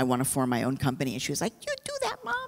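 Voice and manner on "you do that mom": tiny little voice, very high and soft. A mother retells her daughter's reply when she first shared her dream, in Jurema's little voice. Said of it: "In that little voice".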